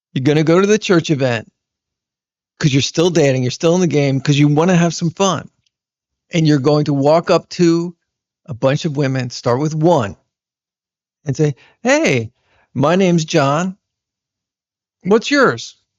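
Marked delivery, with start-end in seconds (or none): 11.9-15.8 easygoing, slow delivery, said smiling. Demonstrating how to introduce yourself to a woman at a church event, smiling while talking. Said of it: "you see how I'm smiling there".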